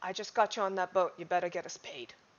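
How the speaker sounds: close, hushed, secretive half-whisper. A player's character grabs a woman by her shirt and speaks, half-whispered in her ear. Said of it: "I'm going to whisper in her ear".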